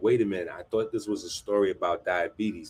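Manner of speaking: ordinary talk, nothing marked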